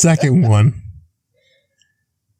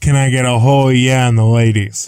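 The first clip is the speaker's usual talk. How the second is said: plain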